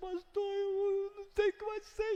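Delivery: mock very high, weeping, desperate, tearful sobbing voice. Retelling a phone call from a desperate church member: imitating a crying woman. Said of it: "E chora no telefone".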